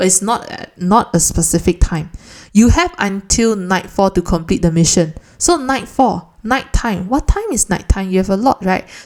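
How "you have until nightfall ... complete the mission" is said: ordinary delivery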